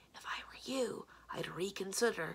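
loud stage whisper meant to be overheard. She leans in toward another person, speaking in a loud whisper. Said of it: "she said in a loud whisper".

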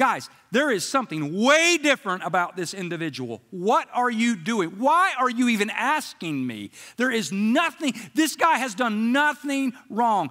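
acted-out, put-on screaming voice. Voicing Pilate's conscience as Pilate judges a prisoner: Pilate's conscience screaming. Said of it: "you can hear his conscience screaming".

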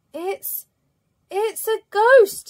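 shrill, very high, very loud, startled gasped cry. A character peeks round a corner after a crash and pulls back; gasping. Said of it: "he gasped".

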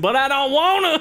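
high, phony Texan twang. In a skit, told to drop the accent, refusing in a fake texas accent. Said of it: "Drop the accent".

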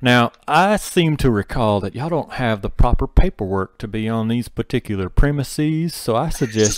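terrible, loud, high, put-on Southern cowboy drawl. Speaker on a game stream mocks the cleric's voice, faux cowboy southern drawl. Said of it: "the cleric just like doing this faux cowboy".

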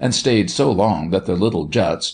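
ordinary delivery, nothing marked

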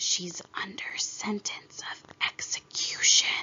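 hushed whispering. The rabbit puts his mouth close to Alice's ear and answers her, whispered.

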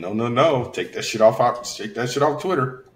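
normal talking voice

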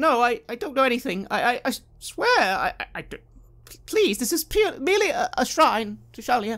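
nervous, stammering voice. Voicing an initiate being looked over by Heinrich, anxious, worried stuttering. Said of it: "She is very anxious and worried about something".

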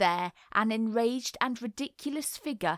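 ordinary delivery, nothing marked

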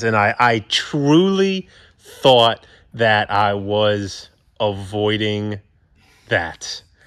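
really slow, sincere, earnest delivery. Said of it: "I said it really slow".

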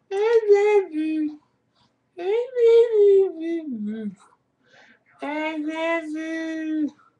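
high, very slow, drawn-out howling dog voice. Offering a little congrats with the impression you have been practicing, do a Mishka impression. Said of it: "So that's my impression of Mishka".

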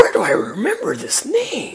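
slow, puzzled inner whisper.

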